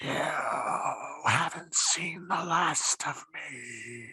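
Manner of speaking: rasping voice coming from all around. As the game master, voicing the plants all around the party, in a raspy plant voice. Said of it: "you hear this raspy voice coming from all around you".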